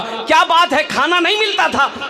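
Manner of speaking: startled exclamation.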